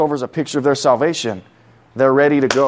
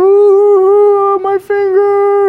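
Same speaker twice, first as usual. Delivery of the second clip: put-on very high, loud, whimpering, whiny child voice; 8 dB louder than usual. Describing a boy who came in hurt; imitating a whimpering kid. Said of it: "He came in like whining, whimpering".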